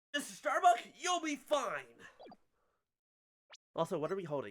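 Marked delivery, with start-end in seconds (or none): 0.2-1.9 high, shrill, very high-pitched yell. Voicing the game line again after not yelling loud enough: louder yelling. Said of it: "I didn't yell loud enough".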